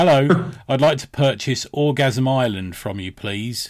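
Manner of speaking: loud, very slow, deliberate, drawn-out delivery. Retelling asking at a seller's table to buy a book: retelling saying it really loudly. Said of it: "really loudly".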